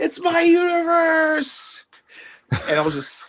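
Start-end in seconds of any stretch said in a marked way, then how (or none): 0.0-1.8 mock, very high, tipsy, drunken yell. Retelling walking around in costume while drunk: imitating own drunk shout. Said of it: "me being drunk, I'm like".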